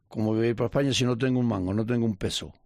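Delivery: normal talking voice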